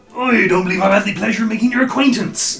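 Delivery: put-on West Country accent, loud and high. Playing a half-orc greeting another character, the speaker uses a West Country accent. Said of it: "I went West Country with the half-orc".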